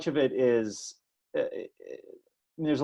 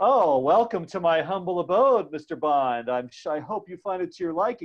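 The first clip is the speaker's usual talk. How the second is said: smarmy, falsely friendly, evil-oozing villain voice; 4 semitones higher than usual. Explaining how villains act friendly while evil, imitating a mock-smarmy evil villain. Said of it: "they're just oozing this kind of evil".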